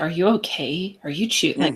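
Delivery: anxious, worried, concerned tone. Describing how people react, imitating someone's worried tone.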